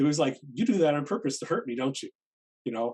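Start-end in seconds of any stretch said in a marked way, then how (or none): 0.5-2.1 put-on nasty, snide tone. Retelling what a mail recipient snapped back: imitating a nasty retort. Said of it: "but it was pretty nasty".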